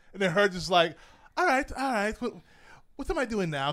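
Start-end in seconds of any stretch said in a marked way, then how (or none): 1.4-3.7 put-on English accent pitched high. Imagining the actress Toni Collette after the director calls cut: imitating Toni Collette's English accent. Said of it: "'Cause I'm pretty sure she's English".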